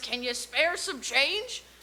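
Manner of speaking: put-on clumsy, bad, so-so old man voice. Speaker retelling what a wizard shouted on the street, old man impression. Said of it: "I can't do a very good old man impression".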